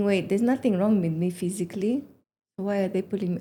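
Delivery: ordinary delivery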